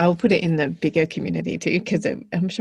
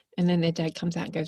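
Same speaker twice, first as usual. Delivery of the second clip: plain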